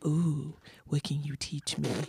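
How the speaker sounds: slow, soft, creepy voice. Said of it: "I just imagine it's a creepy voice".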